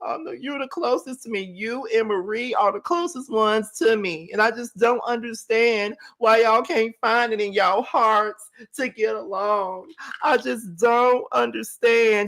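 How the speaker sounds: mocking, fake tearful, crying voice. Repeating what a woman said about two people not getting along, mocking her fake crying. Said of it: "All this fake ass crying".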